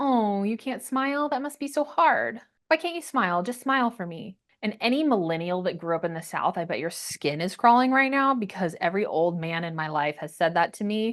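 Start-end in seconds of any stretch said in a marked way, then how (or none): 0.0-4.4 high-pitched, derisive, belittling mocking taunt. Retelling how a speech coach reacted to a refusal: imitating someone mocking. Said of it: "she immediately went to mocking me".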